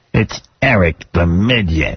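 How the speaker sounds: put-on low sinister voice. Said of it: "He does sound like a sinister, like, Batman villain".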